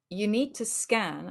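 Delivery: play-acted even, composed, unbothered, slow delivery. Recounting a moment with a woman at a scanner, retelling saying it calmly. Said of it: "And I said it quite calmly".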